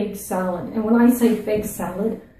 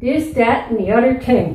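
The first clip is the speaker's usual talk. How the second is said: Newfoundland accent with th and t sounds dropped; 3 semitones higher, 4 dB louder than usual. Teaching listeners how to say a phrase like a Newfie, in a Newfoundland accent. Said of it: "This is how a Newfie says it".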